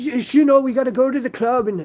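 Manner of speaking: very high, loud, deliberately bad Dublin accent. Trying to do a Dublin accent after hesitating: Conor McGregor Dublin accent. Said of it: "How do how do you do the Dublin accent?".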